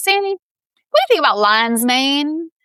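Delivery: put-on country Kentucky good old boy accent. Retelling a cousin's phone call, imitating Brian's Kentucky accent. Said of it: "good accent".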